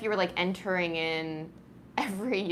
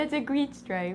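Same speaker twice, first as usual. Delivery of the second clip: high-pitched cat voice; 7 semitones higher than usual. Speaker talks to the cat who is watching the stripe, cat voice. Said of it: "I was kind of using the cat voice".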